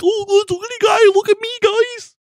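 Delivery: very high, loud, puffed-up goofy cartoon voice. Showing how the speaker inflates their own voice: inflated cartoony voice. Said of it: "I kinda cartoon it".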